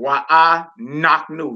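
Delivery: "knock" as the stressed syllable, hit hardest. Explaining a stress mark in a pronunciation guide, stress on knock. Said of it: "I'm putting the emphasis on the knock part".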